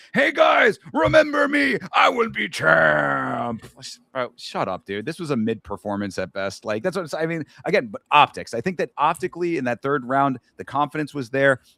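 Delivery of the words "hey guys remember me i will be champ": very high, rough, drawn-out, unhinged maniac yell. Mocking a fighter's post-fight microphone speech: imitating someone yelling like a maniac. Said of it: "on the microphone yelling like an absolute maniac".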